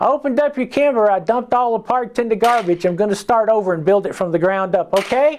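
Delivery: small, little, squeaky voice. Retelling a phone call, the speaker does Bill Loffridge's squeaky voice. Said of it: "he's like this little squeaky voice".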